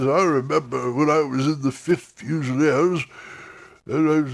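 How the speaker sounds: put-on long-winded, rambling old veteran voice. Demonstrating voice types, doing an old campaigner telling war stories. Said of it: "old campaigners that would just sit there and bore you to death with stories".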